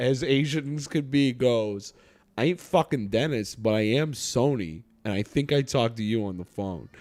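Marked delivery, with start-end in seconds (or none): 2.4-6.9 put-on broadest, thickest New York accent possible. Retelling what a guy said when asked if he was Dennis, in Sony's thick New York accent. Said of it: "in the most New York accent".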